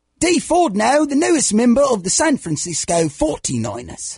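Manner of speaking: sing-song put-on London Cockney accent. Asked by another speaker to say the news in Cockney, Cockney accent. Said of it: "Can you do that in a Cockney accent?".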